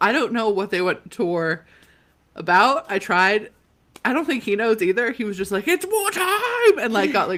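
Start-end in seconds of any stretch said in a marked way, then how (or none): 5.7-6.8 mock pumped-up, hyped exclamation, very high-pitched. Retelling how a friend announced going to war: imitating someone hyped up. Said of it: "got, like, real hype about it".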